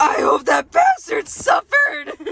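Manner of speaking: loud, slow, drawn-out, swooping pig voice. Reading Deirdre's line from a story aloud, in a pig voice. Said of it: "read it like the pig thing".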